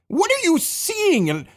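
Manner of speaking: frustrated voice climbing high and slow.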